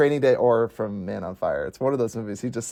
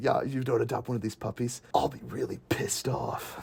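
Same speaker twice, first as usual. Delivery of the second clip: hushed, breathy, whispered stage delivery; 9 dB quieter than usual. Acting out a puppy adoption ad with a gun pointed at the camera: John Wick impression. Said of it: "That's my best John Wick impression".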